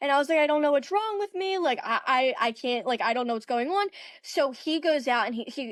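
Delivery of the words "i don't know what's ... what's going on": put-on sobbing, crying sound. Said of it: "And I just broke down, like, crying".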